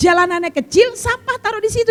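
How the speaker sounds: high-pitched, exasperated, complaining tone. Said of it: "Saya begini".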